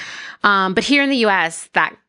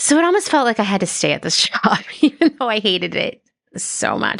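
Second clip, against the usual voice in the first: words broken up by laughing throughout; 3 semitones higher than usual. Explaining feeling stuck at a hated job, laughing while talking. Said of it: "I don't know why I'm laughing".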